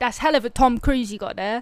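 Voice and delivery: put-on East London Cockney accent. Showing how Londoners would say a phrase, a speaker does a Cockney London accent. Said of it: "They're like London accents".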